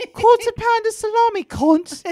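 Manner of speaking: clumsy, loud, high-pitched fake British accent. Teased for not even being British, the speaker tries a bad British accent. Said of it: "That's a bad accent".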